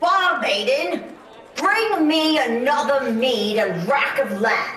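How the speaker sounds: big-hearted, hearty voice. A patron at a table near the stage calls to the bar maiden, loud and booming. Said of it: "A loud and booming voice".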